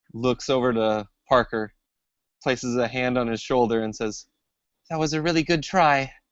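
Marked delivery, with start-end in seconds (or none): 4.9-6.0 high, trembling, quavery, frightened voice. Tabletop player voicing Ellen, hand on Parker's shoulder after a creature attack: quavery voice. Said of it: "in a really quavery voice".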